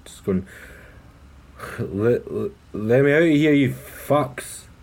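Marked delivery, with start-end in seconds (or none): 1.8-4.6 put-on slow, slurring, drawn-out drunken shout. A player's character kicks at a car's backseat and yells: slurred shout. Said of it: "kind of slurred".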